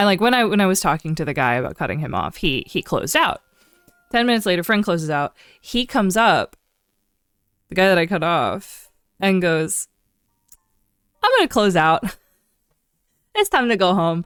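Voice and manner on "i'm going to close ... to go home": put-on happy, breezy, bright sing-song delivery. Retelling a cut-off customer announcing he's leaving, imitating someone happy. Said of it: "all happy".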